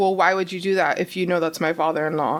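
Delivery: ordinary delivery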